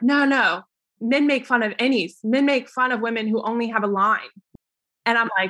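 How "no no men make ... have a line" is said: ordinary delivery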